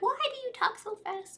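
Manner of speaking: very high, mocking, raging voice.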